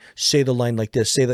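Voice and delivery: normal talking voice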